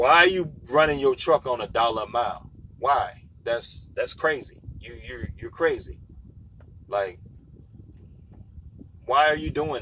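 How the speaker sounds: usual speaking voice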